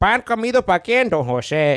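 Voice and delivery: shrill, very high radio-personality voice. Retelling a coworker's catchphrase, imitating coworker Don Jose. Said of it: "He sounds like, uh, fucking, uh, that one guy from the radio".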